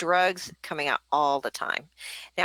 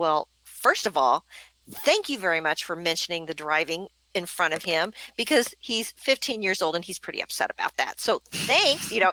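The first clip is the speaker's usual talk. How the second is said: ordinary delivery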